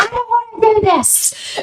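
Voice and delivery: put-on yelling. Retelling refusing to try on a dress: imitating own past yelling. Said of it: "I was just yelling at her".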